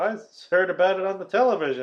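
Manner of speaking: put-on fast child voice. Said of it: "and Danny's like".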